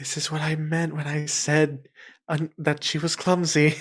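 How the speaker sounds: quiet, soft, hushed half-whisper. A player's character leans over to a man and speaks, half-whispering. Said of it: "leans over and whispers".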